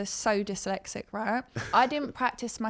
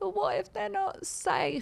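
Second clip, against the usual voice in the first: acted, very high-pitched, weepy, tearful drunk crying; 10 semitones higher than usual. Retelling being drunk and crying on the floor: imitating her own drunk crying. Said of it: "and I was crying, going".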